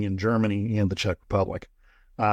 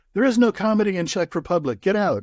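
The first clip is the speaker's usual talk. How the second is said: rude, very high-pitched yelled rant; 10 semitones higher than usual. Retelling a joke about a comedy club waiter, imitating the waiter yelling. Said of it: "the waiter starts yelling at you".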